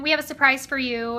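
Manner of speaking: ordinary talk, nothing marked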